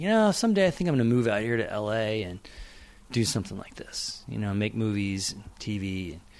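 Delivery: ordinary delivery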